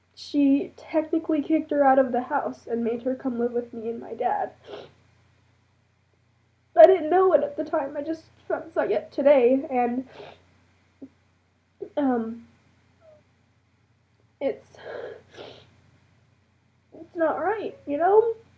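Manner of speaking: crying, tearful voice, talking through tears. Telling the camera about a family situation, crying. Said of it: "I'm crying on camera right now".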